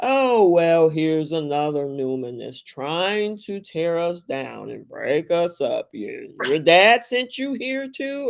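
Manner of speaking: heavy acted sarcasm with a swooping sing-song. Retelling a character walking in the door: imitating Ashland's sarcasm. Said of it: "walks in that door sarcastically".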